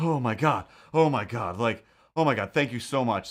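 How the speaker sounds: effusive, gushing outpouring of relief. Retelling how a woman freed from under a car thanked them: imitating a relieved woman. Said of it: "she was so just like".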